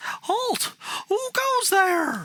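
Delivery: piercing, very high, shrill shriek. A game narrator voices a jester-clad creature's challenge in a high-pitched shriek. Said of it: "With a high pitched voice, it shrieks".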